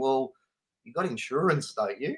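soft, put-on casual, unbothered, nonchalant tone. A speaker retells what he said to a guy afterwards, imitating saying it nonchalantly. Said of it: "very nonchalantly say to him".

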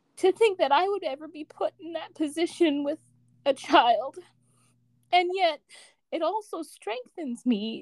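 choked-up, on the verge of crying. Speaking to a woman about raising a child alone, about to cry. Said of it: "I'm going to cry".

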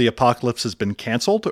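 ordinary talk, nothing marked

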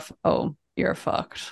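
put-on gruff whisper in a Northern Irish accent. Asked to do the actor's line in his accent: gruff Liam Neeson Northern Irish. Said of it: "It was his very gruff".

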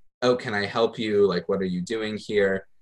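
imitated suspicious tone. Retelling someone questioning them at the synagogue: imitating a suspicious tone. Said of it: "in a very kind of suspicious way".

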